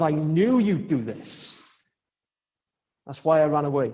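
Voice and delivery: acted-out resentful tone. Preacher retelling Jonah's words to God, in a mock-resentful tone. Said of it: "you can almost hear the tone in Jonah's voice".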